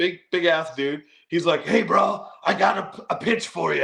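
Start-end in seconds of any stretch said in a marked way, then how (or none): 1.6-3.8 rough, pitched-up wrestler voice. Retelling how a big dude pitched a match, in a Hulk Hogan voice. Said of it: "in Hulk Hogan voice".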